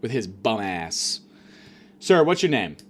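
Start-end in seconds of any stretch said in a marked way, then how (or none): 2.0-2.7 mock exasperated, fed-up, pissed-off tone. Retelling a hospital stay, quoting the nurse: imitating a fed-up nurse.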